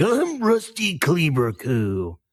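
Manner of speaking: put-on gravelly wrestler voice. Imitating a voice actor's take on a wrestler: Randy the Macho Man impression. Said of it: "decent enough Randy the Macho Man impression".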